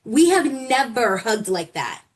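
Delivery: normal talking voice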